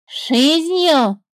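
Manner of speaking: high, teasing, parroting echo. A bird answers a serpent, mockingly mimicking the serpent. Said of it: "передразнила птица".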